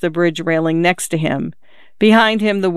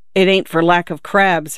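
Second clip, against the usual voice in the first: ordinary delivery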